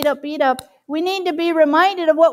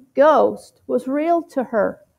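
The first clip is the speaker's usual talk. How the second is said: ordinary delivery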